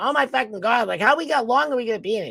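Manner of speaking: put-on Massachusetts accent, complaining, muttered to herself. Retelling a woman in the ER yelling to herself: imitating a Massachusetts accent. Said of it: "She's got the Massachusetts accent".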